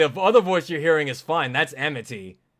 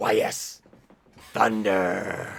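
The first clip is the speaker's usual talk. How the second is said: low, rough chain-smoker-style voice; 7 semitones lower, 4 dB quieter than usual. Recalling a character's voice while hunting for the clip: Arl's chain-smoker voice. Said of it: "like a chain smoker".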